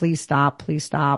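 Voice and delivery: put-on tearful voice. Retelling one's own reaction to blunt criticism, acting out crying and begging. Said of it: "And I'm crying like".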